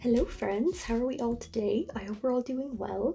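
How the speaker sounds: soft, slightly hushed, a little quiet, held back. Greeting friends while there are people in the house: speaking a little low. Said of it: "Sorry for my voice being a little bit low".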